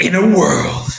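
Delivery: movie trailer narrator voice. Asked to read it as the Transformers trailer guy: Transformers trailer guy voice. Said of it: "read it as the Transformers trailer guy".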